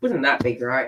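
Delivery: insincere sarcastic delivery. Commenting on a possible surprise visitor in a reading: sarcastic. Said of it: "I'm being sarcastic there".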